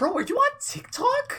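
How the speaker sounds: very high, shrill, loud, hyped-up voice. Retelling a TikTok bit that mocks Gary Vee: high-pitched Gary Vee impression. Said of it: "And he's speaking like that".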